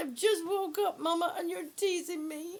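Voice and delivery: voice of a talking pet dog. Speaking for the dog who is being teased: voicing the dog. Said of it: "she said".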